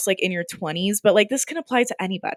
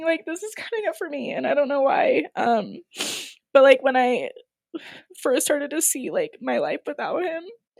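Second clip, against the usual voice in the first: crying, tearful, higher-pitched voice; 6 semitones higher, 3 dB quieter than usual. Recalling the time a marriage was ending, crying while talking. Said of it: "why am I crying?".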